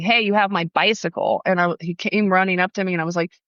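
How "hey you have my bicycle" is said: ordinary talk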